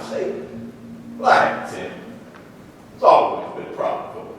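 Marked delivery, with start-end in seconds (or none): 1.2-4.3 put-on sly delivery with a smile. Asked to say a line in a scene, doing it as Clark Gable would: sly, smiling. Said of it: "he'd be a little sly. He'd say it with a smile".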